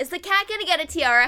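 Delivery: loud, blurted-out yelling. Retelling a guess about the cat during a movie: retelling own yell. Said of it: "I literally yelled".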